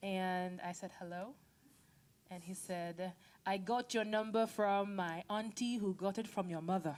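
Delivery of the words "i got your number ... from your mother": put-on, best-attempt Nigerian English accent. Retelling a phone call, the speaker quotes the caller in a put-on nigerian accent. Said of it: "my best Nigerian accent".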